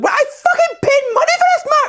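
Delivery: very high-pitched, complaining voice. Retelling what his mum said to him, imitating mum's very high voice. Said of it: "My mum has a very high voice".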